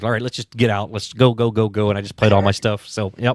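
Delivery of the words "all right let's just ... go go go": ordinary talk, nothing marked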